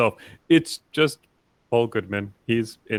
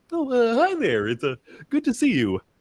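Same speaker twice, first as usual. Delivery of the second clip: very high, swooping, sing-song, wholesome voice; 12 semitones higher than usual. Playing a character dressed like Mister Rogers, greeting someone: Mister Rogers-like voice. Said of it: "He's dressed like freaking Mister Rogers over there".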